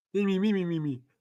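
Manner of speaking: soft, squeaky, high felt-puppet chirp. Imitating someone from the match of the night, in a Muppet voice. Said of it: "Sounded like a Muppet".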